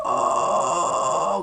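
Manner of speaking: raspy scream. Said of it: "get that raspiness sound".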